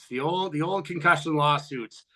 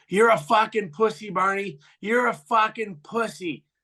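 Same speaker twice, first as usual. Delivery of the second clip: high, heckling yell; 6 semitones higher than usual. Retelling a player's taunt from the bench: imitating someone yelling. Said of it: "and he yells".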